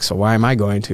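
plain

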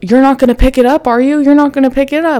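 high-pitched scream, projected across a distance. Retelling a man screaming at the speaker from twenty feet away: retelling a scream. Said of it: "He's screaming like".

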